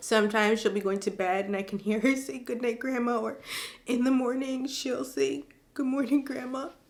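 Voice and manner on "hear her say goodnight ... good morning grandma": tearful voice, crying through the words. Reading aloud an email someone sent about a little girl missing grandma, crying while reading. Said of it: "I don't think I can finish your email".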